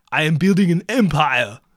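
very loud, booming movie star celebrity voice. Acting out a lumber store skit with a customer: Arnold Schwarzenegger impression. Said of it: "Oh, this is Arnold Schwarzenegger".

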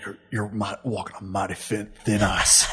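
gruff heroic character voice. Showing how Joel talks in the game: Joel voice. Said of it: "Is that how Joel talks?".

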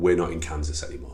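ordinary talk

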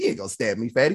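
mock playful taunting tone. Retelling what he said before the counselor came in, retelling a playful taunt. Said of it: "a playful way".

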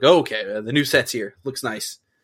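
ordinary talk

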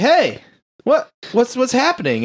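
breezy, unbothered, very high, swooping nonchalant voice. Retelling a film scene where a paramedic finds her hurt partner: imitating a super nonchalant tone. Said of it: "acting, like, super nonchalant".

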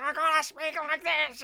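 high, throaty mock yell pushed from back of throat. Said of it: "it's just so in the back of the throat".

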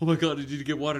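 mock frantic, high, loud panicked cry. Retelling a man with no keys who needs water, acting out super panicked. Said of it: "And he's like super panicked".

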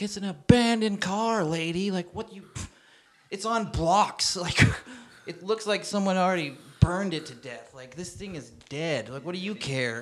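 mock, high-pitched, half-yelled arguing rant. Retelling telling off a woman about an abandoned car: imitating own past yelling. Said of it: "yelling at her".

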